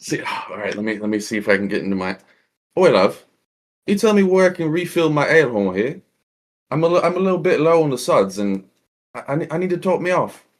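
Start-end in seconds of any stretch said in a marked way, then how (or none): 2.8-10.4 hammed-up, higher-pitched put-on British accent. Asked to do a good British accent, putting on a British accent. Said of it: "Can I get a good British accent".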